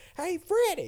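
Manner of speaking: high-pitched call-out. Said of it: "she goes like".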